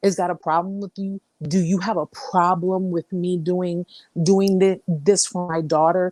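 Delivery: snide, very nasty, condescending put-down tone. A parent retells a man's questions to them, imitating a condescending, nasty tone. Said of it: "Like condescendingly and very, very just nasty tone".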